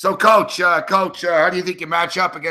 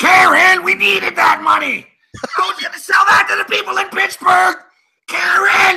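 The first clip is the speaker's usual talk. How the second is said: rough, raised, very high and loud delivery; 14 semitones higher, 5 dB louder than usual. Doing a Ray Liotta impression, yelling at Karen over money: Ray Liotta impression. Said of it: "I do a good Ray Liotta too".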